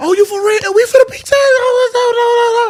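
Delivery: mock fake happiness. Retelling a call about a pregnancy: retelling faking happiness. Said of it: "I had to lie and act like I was happy".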